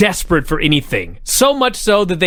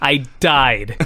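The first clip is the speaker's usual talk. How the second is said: ordinary talk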